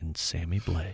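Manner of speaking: slow, unhurried, very low jazz voice. Repeating a hockey fourth line's names on request, slow jazz voice. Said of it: "one of my like uh, jazz voices".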